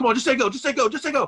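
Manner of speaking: put-on pushy badgering voice. Retelling how an arm wrestling opponent badgered the referees: imitating Devin badgering the referees. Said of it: "he's trying to bully the referees".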